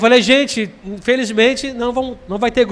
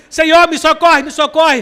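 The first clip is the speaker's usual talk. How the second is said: mock desperate crying out, loud shouting; 5 semitones higher, 4 dB louder than usual. Acting out someone crying out to the Lord: imitating someone shouting for help. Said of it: "clamando, gritando, gritando".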